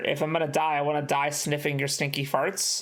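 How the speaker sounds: ordinary talk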